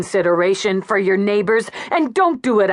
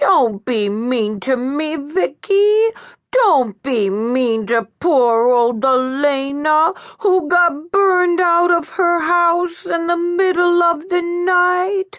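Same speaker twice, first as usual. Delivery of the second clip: high, terrible put-on baby talk; 9 semitones higher than usual. Reading a scene where a character pleads with vicky: terrible parody of baby talk. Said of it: "she said in a terrible parody of baby talk".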